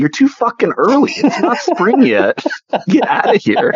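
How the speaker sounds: very high, sing-song, swooping, dismissive tone. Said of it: "I'm like".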